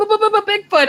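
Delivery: very high-pitched, stuttering, stammering shriek. Retelling jumping up at a sudden sight: retelling a scream. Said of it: "I'm screaming".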